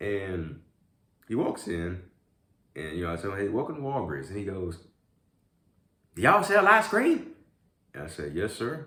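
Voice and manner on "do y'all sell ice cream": put-on very high, very loud country accent. Retelling a Walgreens customer asking a question, imitating a customer's country accent. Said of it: "he has like this country accent".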